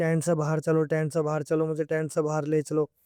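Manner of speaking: ordinary talk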